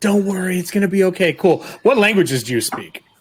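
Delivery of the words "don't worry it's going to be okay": hushed whisper. Voicing a character soothing a creature through a wagon wall: whispering. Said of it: "is Nero whispering to this creature".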